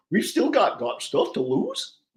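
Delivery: very high, bad goofy cartoon voice. Answering a chat request to do a Goofy voice: Goofy voice. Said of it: "I'm not very good with Goofy".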